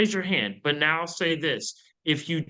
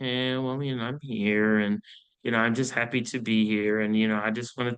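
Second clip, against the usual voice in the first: low, flat, bland, unenthusiastic rambling delivery; 5 semitones lower than usual. Contrasting an excited firm tone with one that is flat, unenthusiastic. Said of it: "Do I sound happy to be there in that moment? No".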